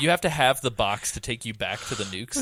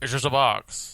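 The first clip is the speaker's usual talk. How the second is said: put-on 1920s old-time mobster voice. Trying the best impression of a game guard's line: 1920s mobster voice. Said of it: "fucking twenties mobster there at the end".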